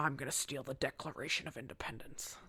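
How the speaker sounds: breathy, half-whispered movie-star voice. Doing a line from National Treasure on cue: Nicolas Cage impression. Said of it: "that's her impression".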